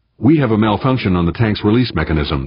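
plain reading voice

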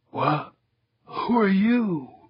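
rasping, painfully dry, parched voice. A youngster wakes after being revived in his helmet, rasping, painfully dry voice. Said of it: "The lad's voice was rasping, painfully dry".

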